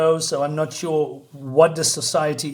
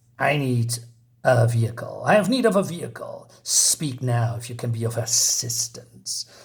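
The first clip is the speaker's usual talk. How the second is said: put-on lisping voice, much lower pitch; 5 semitones lower than usual. Telling a story where Cobra Commander walks in, doing Cobra Commander lisp voice. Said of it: "what's with the lisp?".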